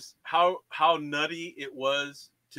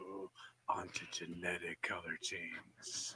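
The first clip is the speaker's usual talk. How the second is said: very hushed, quiet, sultry flat monotone drone; 8 semitones lower, 14 dB quieter than usual. Teasing another speaker, imitating how he says a term in a mock-sexy monotone. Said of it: "Talking all sexy and shit with his monotone".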